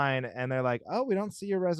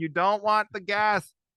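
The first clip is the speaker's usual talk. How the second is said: put-on scream, higher and louder; 7 semitones higher, 4 dB louder than usual. Retelling waiting in a rental car line behind slow customers: imitating own screaming. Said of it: "and I'm just screaming".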